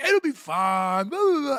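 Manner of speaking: goofy, high, careless, drawn-out tone. Retelling how a debater brushed off warnings: imitating Pentuple being goofy. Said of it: "he's being goofy as shit".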